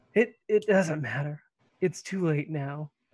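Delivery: small, slight whimper in the voice. Game narrator voicing Will as he responds, with a slight whimper. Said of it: "a bit of a whimper in Will's voice".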